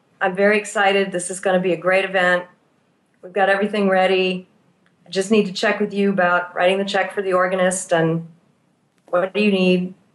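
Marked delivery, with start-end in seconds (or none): 0.2-4.5 mock flat, toneless, monotone delivery. Acting out a woman in a pastoral encounter, imitating a flat tone. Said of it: "in a kind of a flat tone of voice".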